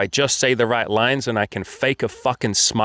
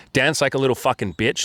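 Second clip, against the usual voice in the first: normal talking voice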